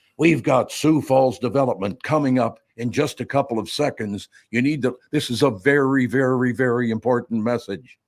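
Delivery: serious political ad announcer voice. Joking with co-hosts about doing this voice for a show, politician voice. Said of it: "I can do that voice pretty well".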